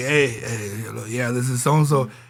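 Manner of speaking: groggy, just-woken-up voice. Retelling a movie scene where someone answers the phone: imitating a just-woken-up voice. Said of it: "He sounded like he just woke up".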